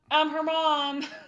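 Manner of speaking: very loud, high, full-volume shouting. A character turns around to tell the others, yelling. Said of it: "Twitch turns around and yells".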